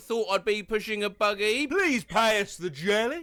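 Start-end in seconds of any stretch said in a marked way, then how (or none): 1.6-3.2 put-on, mock drunk man's voice. Retelling what a drunk guy walking by said to him, imitating a drunk guy. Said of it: "said a drunk guy".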